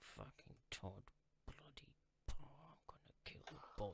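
hushed, whispered cursing muttered under the breath. A character looks over a changed agreement and reacts: cursing under his breath. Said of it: "he curses under his breath".

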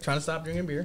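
chewing while talking, mouth full. Studio guest catching up with the host, talking while chewing. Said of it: "while you're chewing, I can hear you".

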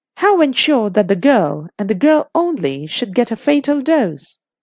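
plain

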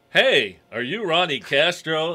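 booming, very loud, slow drawn-out shout. Retelling how a person at airport luggage called out a name: imitating someone calling loudly. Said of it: "the third person walked up and really loud".

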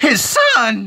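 surprised, loud yelp, voice cracking very high. Hearing Trask may pass his company to his son, voice cracking. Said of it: "the most hilarious voice crack".

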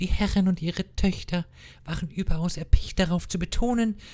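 put-on girly, girlish voice. Reading a woman's lines aloud in a story, in a put-on girlish voice. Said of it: "Dementsprechend kurz mal eben wieder meine Mädelstimme".

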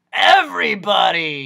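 loud, raspy, surprised exclamation. Reading the story aloud, the doctor's reply to Milo, raspy croaking voice. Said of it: "said the doctor. ... which was so raspy it made you want to clear your own throat".

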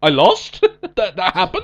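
loud, swooping, stunned, incredulous, shocked voice. Retelling a wrestler's promo about losing: imitating Cena's shocked tone. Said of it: "a look of shock upon his face".

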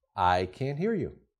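very soft, softest voice. Retelling leaning over to tell her you can't hear her, softest of voices. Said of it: "in the softest of voices".

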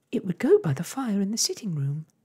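very high, loud, animated, swooping cry. Narrator reads a character's line: cried out. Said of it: "cried Arrietty".

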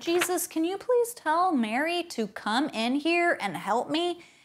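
mock angry voice, high and mad. Retelling a story where a sister got mad: imitating an angry complaint. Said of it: "And Martha got really mad".

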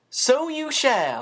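warm, welcoming, slightly high pitch. A character agrees that another will stay to keep a lad company, warm, smiling broadly. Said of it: "announced warmly, smiling broadly".

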